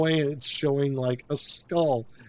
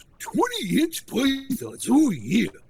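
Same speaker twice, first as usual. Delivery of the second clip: put-on gravelly wrestler voice, sometimes higher; 10 semitones higher than usual. Joking with another speaker who just named the voice: Macho Man voice. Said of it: "You sound like the Macho Man now".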